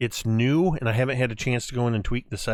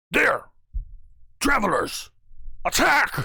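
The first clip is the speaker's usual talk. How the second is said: rough, gravelly, barked delivery at very high pitch; 11 semitones higher than usual. Game master voicing a Draconic speaker to the players, gravelly barked voice. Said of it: "gravelly and almost barked voice".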